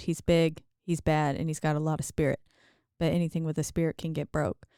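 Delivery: ordinary delivery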